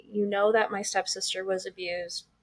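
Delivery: normal talking voice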